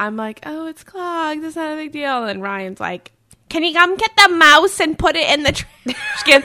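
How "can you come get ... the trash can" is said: put-on loud, swooping, sing-song old grandma voice. Retelling what Ryan asked about the mouse, imitating Ryan like a grandma. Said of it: "I just imitated him like he was a grandma".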